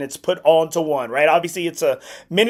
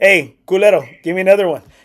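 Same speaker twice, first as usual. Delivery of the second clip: put-on drunk voice, louder; 5 dB louder than usual. Retelling how Victor Trevino ran up a bar tab: imitating Victor Trevino. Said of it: "He was just like".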